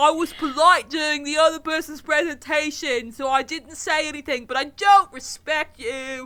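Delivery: high-pitched shouting yell. Playing an audience member heckling a presenter: yelling as audience member Steve. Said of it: "so I'm yelling".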